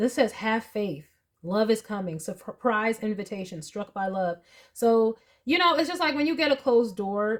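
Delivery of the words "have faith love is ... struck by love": normal talking voice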